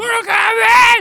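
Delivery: shouting. Introducing the 1995 film they watched: shouting the movie title. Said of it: "You can't say it without saying it like that".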